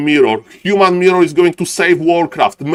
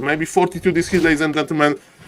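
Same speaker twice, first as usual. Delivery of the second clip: normal talking voice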